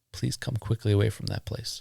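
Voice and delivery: calm, composed, unruffled, even-tempered voice. Reading Axel's response in a story, in a calm, extremely quiet voice. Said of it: "Axel responded in a calm and extremely quiet voice".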